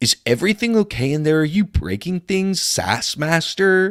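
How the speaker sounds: exasperated character voice, calling out. Game master speaks as Cameron, calling to a player: exasperated Cameron calling out. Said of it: "You hear an exasperated Cameron call".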